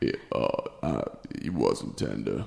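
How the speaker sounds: slow, quiet, breathy near-whisper. Asked for an impression, answering as Kawhi Leonard: Kawhi Leonard impression. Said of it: "Can I hear your impression?".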